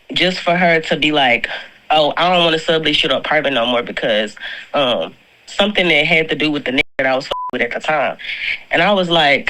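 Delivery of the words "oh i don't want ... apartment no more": plain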